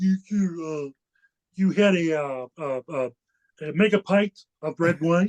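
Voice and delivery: cartoon frog puppet voice. Speaker reenacts a lawyer's line in a bit; Kermit the Frog voice. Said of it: "I did the voice. I cut uh, Kermit the Frog".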